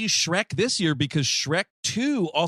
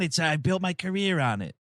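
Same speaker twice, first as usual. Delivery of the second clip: put-on soft, whispery New York accent. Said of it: "I'm kinda whispering with a New York accent".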